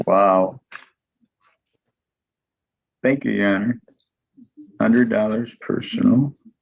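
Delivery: grudging, unhappy, none too pleased tone. Thanking the judge for a hundred dollar bond ruling, sounding not too happy. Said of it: "You don't sound too happy about that".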